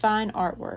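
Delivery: ordinary delivery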